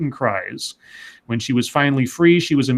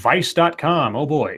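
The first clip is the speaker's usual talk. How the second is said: ordinary talk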